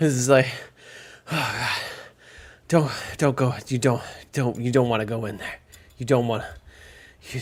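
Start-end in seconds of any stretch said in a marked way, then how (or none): 1.3-7.4 heavy panting, quieter. As a trapper running through snow toward the five of you, panting. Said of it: "he runs towards the five of you, panting".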